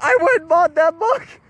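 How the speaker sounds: annoyed, angry, griping tone. Retelling how annoyed buyers complained: imitating angry buyers. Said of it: "people were getting pissed".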